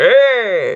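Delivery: high, loud, drawn-out stretched "hey". Joking about casting a movie remake: Steve Buscemi voice. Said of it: "that's my Steve Buscemi voice".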